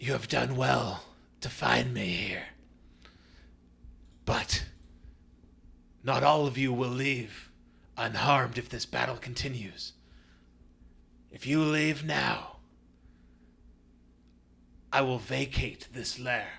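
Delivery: loud, raspy, clicking monster voice. Narrator voicing a creature speaking to the group, clicking, raspy creature voice. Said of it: "this clicking, um, raspy sound".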